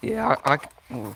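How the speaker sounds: slow voice breaking mid-word. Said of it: "voice crack".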